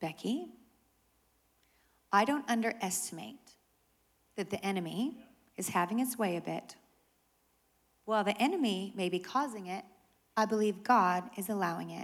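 mock-calm voice. Retelling the pastor's reply on the phone, imitating calm speech. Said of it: "she responds very calmly, very calmly".

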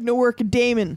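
put-on Michigan-style Midwestern accent with long a's. Retelling an actor's misread line in a Midwestern accent. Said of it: "Nice Midwesterner accent".

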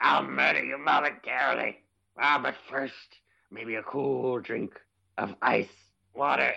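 dragged out, rough and slobbery. After others describe the character's slobbery voice, a speaker attempts a Penguin from Batman Returns impression. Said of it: "a penguin from Batman Returns impersonation".

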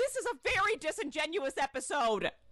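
mock, sudden, high, blurted outburst. Retelling what someone yelled during the episode: imitating someone yelling. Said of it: "he just yells out".

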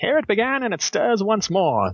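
put-on swooping, old-timey radio announcer delivery. Reading the blurb on the back of The Origin in an old-timey radio announcer voice. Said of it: "as old-timey radio guy".

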